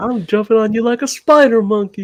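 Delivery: put-on southern country accent. Quoting what one of the kids says, southern accent. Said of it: "like southern accent".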